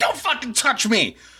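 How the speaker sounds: put-on furious yell. Retelling losing their temper when a girl touched them, retelling an angry shout. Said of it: "I was like super pissed and and losing my temper".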